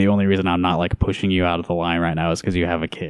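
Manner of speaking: ordinary delivery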